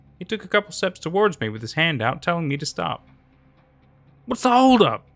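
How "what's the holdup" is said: loud shout at very high pitch. Stepping down from the RV toward an approaching man, shouted. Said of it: "I shouted".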